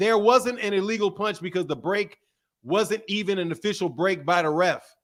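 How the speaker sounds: normal talking voice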